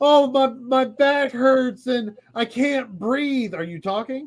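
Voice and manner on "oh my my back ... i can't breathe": put-on babyish, whiny, high, drawn-out complaining voice. Retelling an arrested agent's complaints, imitating a whiny agent. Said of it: "acted like a giant infant the entire time".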